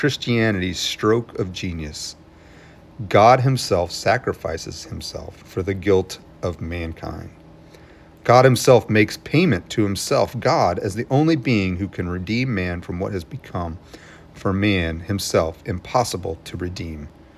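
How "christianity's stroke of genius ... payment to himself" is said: plain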